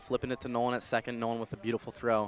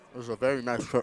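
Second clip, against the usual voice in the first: speaking with mouth full, munching and chewing. A baseball commentator calls the count while eating a snack: talking with mouth full. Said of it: "Sorry, I'm just munching on".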